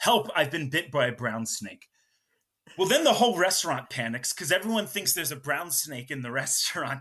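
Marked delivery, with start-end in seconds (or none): none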